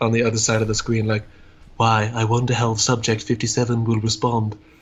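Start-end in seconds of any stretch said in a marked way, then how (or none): 1.8-4.5 mock flat, lifeless, affectless monotone. Imagining an internet troll behind the screen: imitating a dead-eyed flat troll. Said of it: "someone with really dead eyes".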